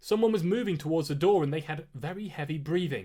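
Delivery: plain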